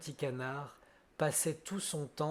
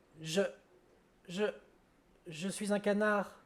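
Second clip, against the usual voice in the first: stuttering, stammering, higher pitch; 6 semitones higher than usual. Narrator reading the duckling's reply to the wild ducks, stuttering. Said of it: "répondit en bégayant".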